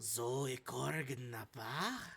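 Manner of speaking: very slow, drawn-out, sultry low voice. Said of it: "very, like, sultrous, like, low voice go".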